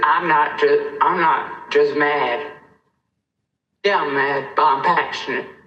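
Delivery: near crying, pushing through, on verge of tears. Speaking out against creating new pits, about to cry. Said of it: "I know I'm about to cry".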